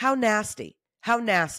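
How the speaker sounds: scolding, telling-off motherly voice. Reacting to what people say, slipping into a mom voice. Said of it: "now I've got my mom voice".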